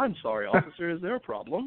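put-on polite, very proper-sounding voice. Retelling a traffic stop, answering the cop in a Wayne Brady voice. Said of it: "even after I put on my best Wayne Brady".

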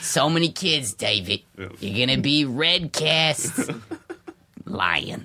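put-on high, old grandmother voice. Speaker retelling a theater casting story in their grandma's voice. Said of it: "I'm talking my grandma's voice".

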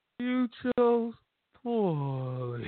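mock sorrowful, deflated. Retelling how another speaker delivered a movie quote: imitating Chuck sounding sad. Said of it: "He just sounded so sad".

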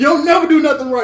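high-pitched, loud, angry yell.

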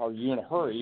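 ordinary delivery

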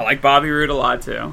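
usual speaking voice

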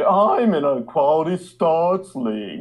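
really affected put-on British accent, high and slow. Mocking people who turn their nose up, in a really affected British accent. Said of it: "they use a really affected British accent".

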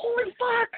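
sudden shocked cry, high-pitched. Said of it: "he's like".

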